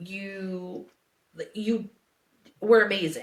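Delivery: acted tearful, crying voice. Retelling what was said in the locker room: imitating own past crying. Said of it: "I'm over here crying and was like".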